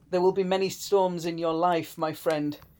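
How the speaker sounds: plain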